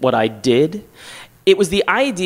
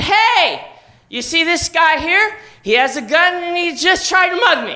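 mock very high, drawn-out yell; 13 semitones higher than usual. Retelling being mugged and alerting people across the street, retelling a yell across the street. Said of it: "I yelled across the street".

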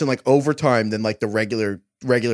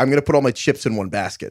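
ordinary delivery

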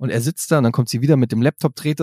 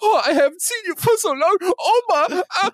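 very high, acted, weepy blubbering, sobbing wail. Mocking a man's overdone video call with his family, imitating someone crying. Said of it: "wer heult er nur".

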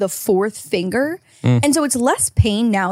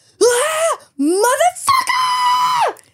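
shrill, very high scream on a hard exhale. Retelling how a man at the gym sounds when he lifts: imitating someone screaming. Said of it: "he's just screaming, fucking screaming across the gym".

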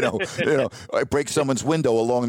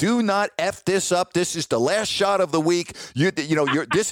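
pitched-up, pressured, self-berating cursing tone; 5 semitones higher than usual. Retelling a golf shot, quoting his own words: retelling cursing at himself loudly. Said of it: "I'm cursing at myself loud".

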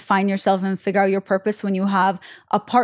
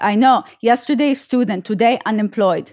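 put-on very thick, heavy Russian accent; 3 dB louder than usual. Retelling her father's reply the day after she graduated, in a very thick Russian accent. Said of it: "with this very thick Russian accent".

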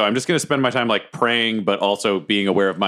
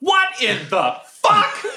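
very high, slow, swooping, drawn-out yell. Playing a character in the arena stands: yelling in character. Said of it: "I just yell".

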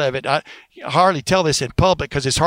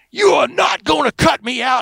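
put-on shrill screaming tirade, very high pitched; 11 semitones higher than usual. Act out the man just told they are going another direction, imitating Don King screaming. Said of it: "And Don King starts screaming".

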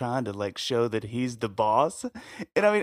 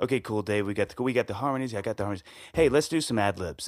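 put-on matter-of-fact voice, lower; 3 semitones lower than usual. Retelling what the producer said after vocals: imitating a matter-of-fact producer. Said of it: "he's so matter of fact".

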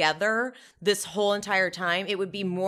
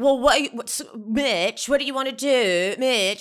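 annoying, irritating put-on voice, pitched much higher; 4 semitones higher, 5 dB louder than usual. Complaining about an insufferable woman, mimicking how she talks: imitating her annoying voice. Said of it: "her voice is so annoying".

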